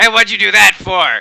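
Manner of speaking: goblin voice, complaining. Voicing red caps who complain after the splinter is pulled. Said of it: "kinda look at you and say".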